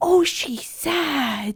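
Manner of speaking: put-on baby talk voice. Retelling how a mom in the theater talked to her daughter: imitating baby talk. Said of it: "a baby talk throughout the movie".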